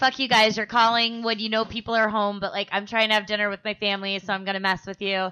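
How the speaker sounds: plain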